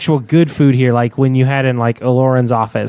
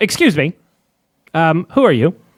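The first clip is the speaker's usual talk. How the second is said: stubby, short robot servant voice; 4 semitones higher than usual. Voicing a short protocol droid that approaches the players, protocol droid voice. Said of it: "a really short uh, protocol droid".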